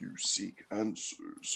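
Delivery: low, hushed, barely audible whisper. Retelling what Xemnas says: imitating Xemnas's low voice. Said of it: "impossible for me to go as low as his voice is".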